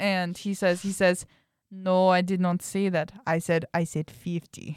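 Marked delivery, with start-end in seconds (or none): 1.7-4.8 imitated Russian accent. Retelling what the Russian guy said back: Russian accent. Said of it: "That is my Russian accent".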